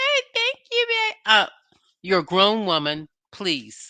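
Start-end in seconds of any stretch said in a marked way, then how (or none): 0.0-1.1 put-on very high, childlike, babyish voice. Mocking how she walked into the hotel room: Kimmy's baby voice. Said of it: "with that baby voice".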